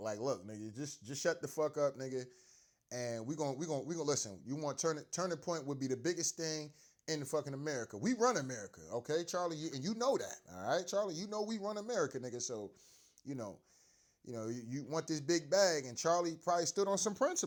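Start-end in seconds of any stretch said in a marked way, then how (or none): none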